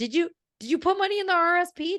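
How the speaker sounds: mock yelling. Retelling how the accountant yelled every December: imitating accountant yelling. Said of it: "my accountant has yelled at me".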